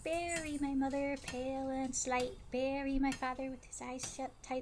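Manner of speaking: soft attempt at a high voice, missing. Trying out a voice on a rhyme, attempted high-pitched voice. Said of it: "That's not really high pitched".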